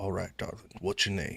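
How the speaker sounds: quiet breathy whisper. Narrating a game scene, a man speaks to Winter, who just came on stage, whispering. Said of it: "he whispers to you".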